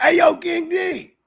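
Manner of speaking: put-on very high, long-stretched, drawn-out yell. Imitating the homies in the chat yelling a greeting: imitating chat viewers yelling. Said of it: "the homies in the chat be yelling like".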